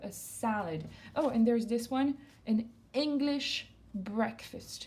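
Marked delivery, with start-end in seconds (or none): 0.0-0.8 salad with stress on first syllable sa-. Teaching English food words in French, stress on first syllable of salad. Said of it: "l'accent sur la première syllabe".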